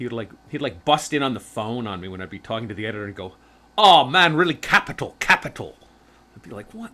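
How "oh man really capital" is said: put-on hoity, snooty British accent, louder. Speaker quotes a man who'd butt into calls with the editor, in a hoity British accent. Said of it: "that sort of like hoity British accent he had".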